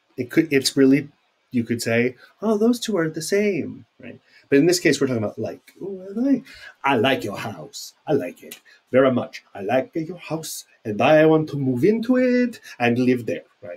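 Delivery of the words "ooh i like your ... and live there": strange, weird put-on Italian accent. Speaker giving an example sentence for the word like; weird Italian accent. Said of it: "So that was a weird Italian accent".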